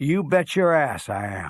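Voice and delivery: acted shout at full volume. Telling an old joke, the speaker acts out his reply: retelling a bellow at top of lungs. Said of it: "bellow at the top of his lungs".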